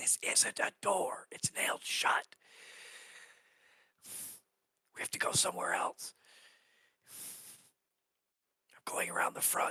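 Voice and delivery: breathy, theatrical stage whisper meant to carry. Speaking so the people nearby can hear, in a stage whisper. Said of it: "I'm gonna whisper as you know, kind of stage whisper".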